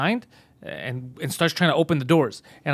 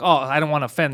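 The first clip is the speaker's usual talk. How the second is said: normal talking voice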